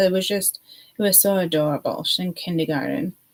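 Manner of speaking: normal talking voice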